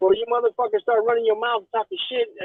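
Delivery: put-on strong New York accent. Retelling what a woman on Instagram said, in a strong New York accent. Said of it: "you can hear the strong New York accent too".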